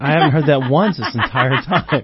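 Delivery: heavy sarcasm with mock surprise and a laugh.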